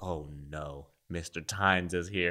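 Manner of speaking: soft, frightened dread. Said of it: "all the kids would be like".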